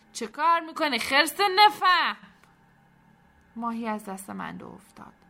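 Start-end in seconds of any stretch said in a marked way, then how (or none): 0.1-2.1 very loud, very high, angry running shout. Running toward someone at the big crate, shouting while running. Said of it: "میدوید و داد میزد".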